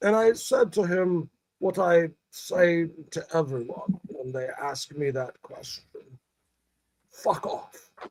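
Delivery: put-on soft, very upper-class posh British accent. Retelling a man's answer to a drunken guy's question, very posh British accent. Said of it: "in a very very posh British accent".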